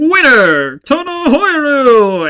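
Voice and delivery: very loud, very high, swooping, booming announcer. Retelling a show's finale scene: imitating an announcer. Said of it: "the announcer coming in like".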